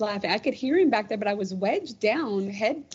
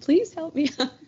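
mock giggling, laughing and high-pitched; 7 semitones higher, 3 dB louder than usual. Retelling being stuck behind a bed, imitating own laughing plea. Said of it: "and I'm laughing, going".

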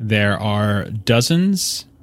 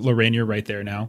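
plain

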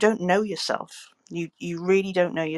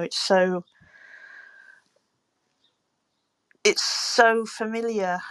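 getting upset, emotional, higher; 3 semitones higher than usual. Sharing a personal struggle with a group, getting upset. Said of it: "Sorry, I'm getting a bit upset".

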